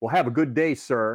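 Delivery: defiant.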